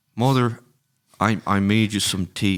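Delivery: put-on Irish-sounding accent throughout, plain delivery. Asked for a character's line from a film, attempting the accent: Irish-sounding accent. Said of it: "that's like just Irish".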